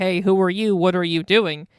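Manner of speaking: usual speaking voice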